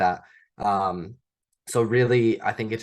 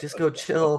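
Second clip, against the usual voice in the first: put-on nagging, bitchy voice; 7 semitones higher than usual. Acting out the inner voice that says to skip the work: imitating the bitch voice. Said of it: "I call it the bitch voice".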